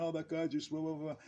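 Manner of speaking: high, screaming outburst. Retelling what the others in the dressing room said: imitating people screaming. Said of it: "they're screaming".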